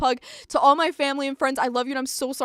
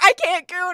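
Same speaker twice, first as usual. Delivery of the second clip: imitated man screaming, higher and louder; 5 semitones higher, 6 dB louder than usual. Retelling what a man in a drive-thru keeps doing: imitating a man screaming. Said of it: "He keeps going in and screaming".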